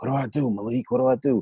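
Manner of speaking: quiet, breathy whispering. Retelling a phone call from a store checkout: imitating her whispering. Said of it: "she's whispering in the phone like".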